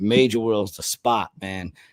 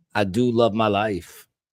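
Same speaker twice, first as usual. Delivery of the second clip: ordinary delivery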